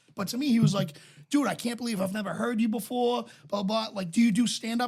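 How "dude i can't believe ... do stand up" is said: normal talking voice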